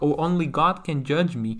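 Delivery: ordinary talk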